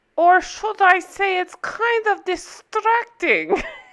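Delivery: put-on German accent. Talking about a show whose accent makes you laugh, imitating an accent from a show. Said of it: "I promise I'm going to quit doing that".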